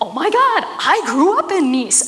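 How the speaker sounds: high-pitched, excited gush.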